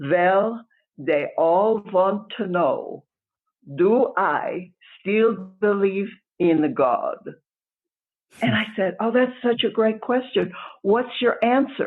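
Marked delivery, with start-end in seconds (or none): 0.0-7.2 put-on unhurried, deliberate Polish-accented English. Speaker retells a man's answer to a question, imitating Nushik's Polish accent. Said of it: "in his wonderful Polish accent".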